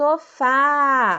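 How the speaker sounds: sofá called out loud, fá stretched long. Showing how to say sofá to a distant friend: calling out sofá, fá lengthened. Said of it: "a sílaba que eu prolonguei quando eu pronunciei a palavra foi a sílaba fá".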